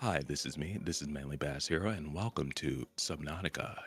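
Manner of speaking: put-on monotone, low-energy voice. Imitating a horror game YouTuber's intro: imitating Manly Bass Hero's no-energy voice. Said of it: "no energy whatsoever".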